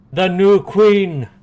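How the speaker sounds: loud, high yelled call. A character steps forward and yells to the rest of the cave: yelling announcement. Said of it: "he yells at to like the rest of the cave".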